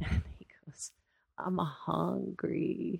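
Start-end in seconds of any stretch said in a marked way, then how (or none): 1.4-3.0 put-on drunk man voice, quieter. Retelling a man banging on a window late at night: imitating a drunk man. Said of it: "He was loaded".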